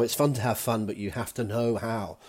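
ordinary talk

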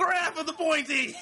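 put-on, high-pitched, loud battle cry.

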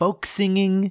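high sneering mockery.

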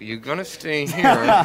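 words forced out through clenched, gritted teeth. Retelling how a manager told her to stay, imitating speaking through clenched teeth. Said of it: "clenched teeth".

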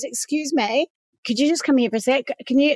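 put-on nervous man voice. Retelling what a man in a van said: imitating a nervous man. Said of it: "he was a bit nervous".

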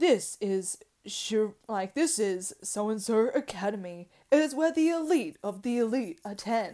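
grave, deep, masculine announcer-style narrator voice. Describing a show, imitating its narrator in a serious, deep, masculine voice. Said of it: "the narrator is like this serious, deep, masculine voice".

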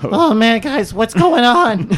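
very high, loud put-on teenager voice. Storyteller voicing a character in the group's game, in a teen voice. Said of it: "I got to do like a teen voice now".

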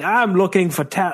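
mock, put-on British accent. Imitating a wrestling manager's entrance line, British accent. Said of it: "what was that British accent I was doing".

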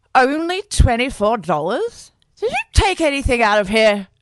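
put-on loud, high, drunken slurring. A mother questions her son about the collection tin's money; slurred. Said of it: "his mum slurred at him".

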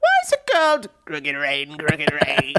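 sing-song character voice with wild pitch swoops. Asking a podcast cohost a question in a Jiminy Glick impression. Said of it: "That's my Jiminy Glick impression".

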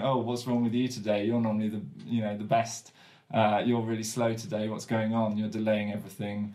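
usual speaking voice

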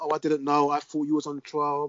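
ordinary talk

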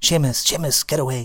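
put-on accent from Fermanagh. Retelling what she said during a family photo, Fermanagh accent. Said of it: "in her Fermanagh accent".

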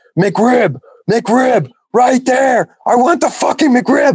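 acted, very high, slow, drawn-out furious scream. Retelling how a man ordered at a McDonald's: imitating a man screaming. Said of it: "he was just fucking screaming at 'em".

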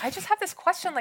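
high-pitched mock puzzled voice. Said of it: "he was like".

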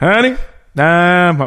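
put-on bad delivery, "honey" drawn out. Imitating an actor's bad line delivery: drawn-out honey, rushed home. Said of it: "You spent too long on honey, now you've gotta say home".

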